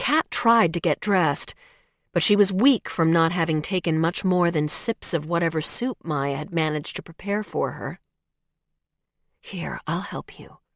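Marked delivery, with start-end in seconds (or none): 9.4-10.5 hushed, soft, low-key voice. Maya offers to help the weak Kat get dressed, in a hushed voice. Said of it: "Maya said in a hushed voice".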